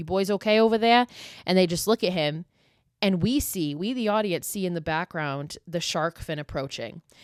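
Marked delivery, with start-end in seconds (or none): 0.0-1.1 loud, strong, put-on Massachusetts accent. Retelling a Jaws scene, quoting a fisherman in a rowboat, Massachusetts accent. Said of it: "such a fucking Massachusetts accent".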